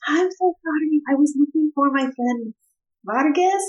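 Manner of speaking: not-so-quiet whisper. Player's character speaking to irritable sleepers in a camp at night, whispering. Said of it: "and I'm whispering".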